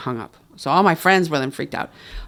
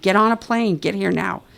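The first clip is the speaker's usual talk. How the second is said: light, mild screaming; 5 semitones higher than usual. Retelling a phone call where mom orders a flight: imitating mom screaming. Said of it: "she's screaming at me".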